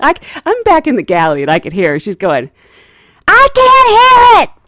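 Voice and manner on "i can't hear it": very loud, very high-pitched, slow, drawn-out words. Retelling a passenger with headphones who can't hear: imitating someone talking loudly. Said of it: "They're talking loud".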